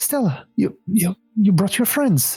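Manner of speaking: bright, light, high voice with cheery excitement. A man in the gloom greets Stella, who brought her friends; cheery, light voice. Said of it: "his voice is cheery and light".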